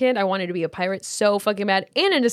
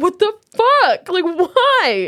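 very slow, high, loud, drawn-out put-on sobbing wail; 10 semitones higher, 6 dB louder than usual. Retelling their reaction when all the game's characters die: retelling sobbing. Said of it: "And I'm just sitting there sobbing".

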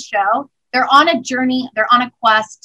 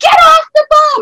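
put-on scream, much higher and louder; 9 dB louder than usual. A parent recalls this morning with the kids, retelling screaming at kids. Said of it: "I'm screaming at my kids".

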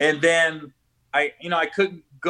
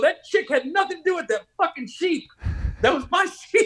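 put-on angry, pissed-off outburst, higher pitch; 12 semitones higher than usual. Retelling an outburst about a sheep that placed fifth: imitating own angry rant. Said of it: "I was so pissed".

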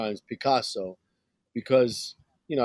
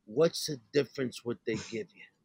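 put-on plain, old grandfather voice; 7 dB quieter than usual. Retelling a grandfather's reply about the Western role: imitating grandpa. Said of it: "He goes".

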